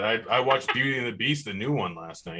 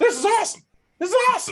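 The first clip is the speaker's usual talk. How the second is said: very high, loud, squeaky voice; 5 dB louder than usual. Act out the guy who went to the Galaxy game, in a really high squeaky voice. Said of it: "talked to that really high squeaky voice".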